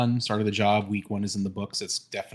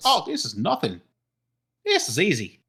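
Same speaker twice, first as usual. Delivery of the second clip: put-on thickest Minnesota accent, laid on, sing-song; 7 semitones higher, 4 dB louder than usual. Retelling what the man who pulled up said: thickest Minnesota accent. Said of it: "With the thickest, thickest like Minnesota accent".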